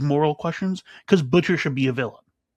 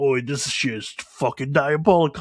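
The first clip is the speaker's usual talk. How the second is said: put-on British accent. Retelling a show scene of a really good impression: Butcher impression. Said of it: "making a really good Butcher impression".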